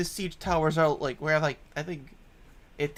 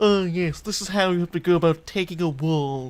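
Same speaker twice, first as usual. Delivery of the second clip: snobby, snooty put-on voice; 4 dB louder than usual. Explaining where a surprisingly good plan came from: mock-snobby inner voice. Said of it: "a snobby voice in the back of my mind".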